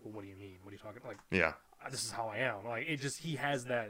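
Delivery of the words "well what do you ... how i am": smug, arrogant, baffled, self-justifying tone. Imitating how the actor would answer being called a prick: imitating an arrogant, puzzled tone. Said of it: "a voice of, like, an arrogant prick".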